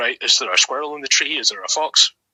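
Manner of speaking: ordinary talk, nothing marked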